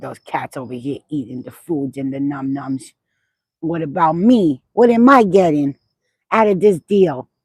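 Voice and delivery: slow, drawn-out talking house cat voice. Speaking for the cat, who wants attention too: voicing the cat Luna. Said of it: "she's like".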